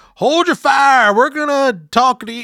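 put-on very high, shrill, loud shouted call. Recapping a show, the speaker imitates someone outside the house, retelling a yell. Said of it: "someone outside the house yells like".

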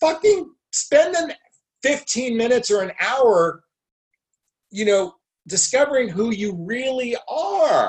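agitated, worked-up ranting, pitched very high. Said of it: "I'm agitated right".

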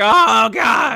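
mock pained old man groaning. Retelling a bleeding wrestler's reaction: imitating an old man in pain. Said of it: "this old man is like".

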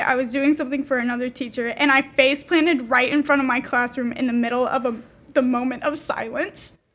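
ordinary talk, nothing marked

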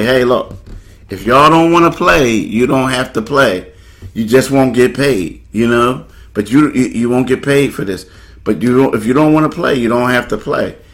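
ordinary delivery

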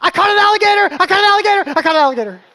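very high, loud, full-lung shriek. Retelling his daughter's reaction to a huge tug on the fishing rod, screaming. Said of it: "screaming at the top of her lungs".

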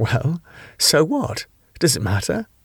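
spoken through nervous laughter. A woman answers a questioner's remark about her, with a nervous laugh. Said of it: "Claire laughed nervously".

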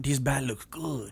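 put-on Mexican-accented character voice. Joking about someone eating a raw bat, in a mock Mexican accent. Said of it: "just say in your normal voice?".

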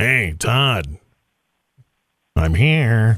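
very low-pitched, very slow, dragged-out drawl. Imagining the Grim Reaper behind him: Norm Macdonald voice. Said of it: "complete with Norm Macdonald voice?".

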